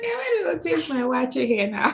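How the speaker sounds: playful, teasing mock impression, high, through a laugh.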